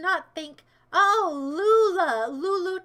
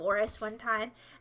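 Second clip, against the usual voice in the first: plain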